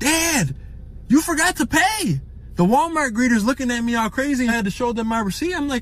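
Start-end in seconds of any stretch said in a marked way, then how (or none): 0.0-2.2 put-on, very slow, high, swooping, drawn-out yell. A father retells his daughter yelling at the Walmart front door, retelling a yell at top of lungs. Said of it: "She yells at the top of her lungs".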